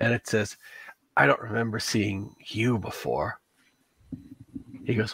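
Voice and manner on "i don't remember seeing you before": hissing lisp, quieter. Narrating a tabletop game, speaker voices a cloaked tick man: hissing lisp. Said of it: "the hissing lisp of a tick man".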